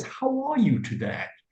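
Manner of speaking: clear, lifted, posh upper-class British accent. Demonstrating how the King of England would speak: speaking like the royal family. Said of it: "would speak like this".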